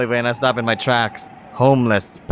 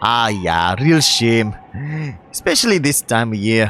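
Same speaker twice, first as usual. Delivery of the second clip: put-on Scottish-accented speech. In a scene, answering right after being asked about the accent, scottish accent. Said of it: "do you have a Scottish accent?".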